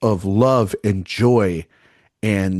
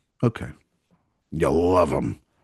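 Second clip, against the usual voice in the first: clenched-jaw lockjaw put-on voice, slower pace; 5 semitones lower, 4 dB quieter than usual. Podcast host replying to a co-host who loves movies, in a lockjaw voice. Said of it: "shouldn't have done lockjaw voice there".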